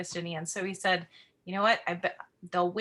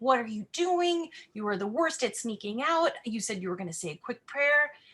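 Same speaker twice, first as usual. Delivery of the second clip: imitated angry whisper, whispered yelling; 3 semitones higher than usual. Retelling a man who stormed into the church yelling at the speaker, imitating an angry whisper. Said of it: "basically yelling at me in whispered tones".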